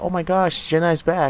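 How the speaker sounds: acted very high, loud, thrilled excited shrieking. Speaker recalls the crowd reacting to her name, imitating fans screaming excitedly. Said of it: "Had a lot of people screaming like".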